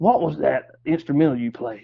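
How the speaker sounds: imitated raspy voice. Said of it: "J D had a graspy voice".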